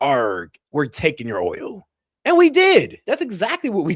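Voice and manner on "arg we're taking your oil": put-on pirate voice. Joking about seizing oil at sea: mock pirate voice. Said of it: "When Trump was engaged in acts of piracy".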